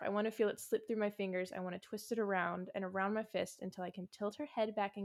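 usual speaking voice

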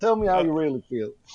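speech with a Southern accent. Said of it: "a Southern accent, like Doctor Phil".

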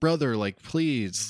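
desperate pleading tone. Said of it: "begging for his life".

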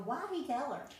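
put-on high, screamed-out cry. Retelling a reaction to a movie scene: imitating screaming at the tv. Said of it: "I was screaming at the T V going".

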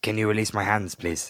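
put-on French-accented goblin voice. Asking to have its bound hands released, speak in a French goblin voice. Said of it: "He's a French goblin".

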